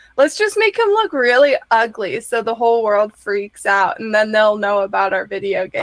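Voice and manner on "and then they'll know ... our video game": ordinary talk, nothing marked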